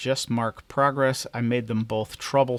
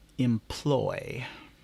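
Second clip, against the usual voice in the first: heavy extra stress placed on the word employ. Narrator reads a stranger's line to officials around a table, stressing 'employ'. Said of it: "extra emphasis on the word employ".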